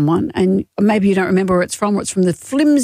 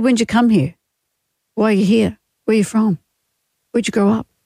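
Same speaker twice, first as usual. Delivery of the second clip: usual speaking voice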